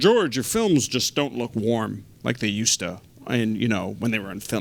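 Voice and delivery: dropped, put-on deep voice, drawn out. Quoting a guy from Kodak, in a deep voice. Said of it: "[DEEP VOICE]".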